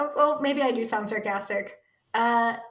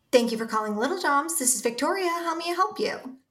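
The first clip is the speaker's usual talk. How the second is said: happy, cheerful voice with rising pitch; 4 semitones higher than usual. Asked for an example, the speaker answers a pretend business call sounding happy. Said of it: "Can you sound happy but look angry while you're talking?".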